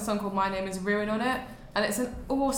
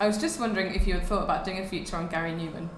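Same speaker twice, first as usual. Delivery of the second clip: ordinary talk, nothing marked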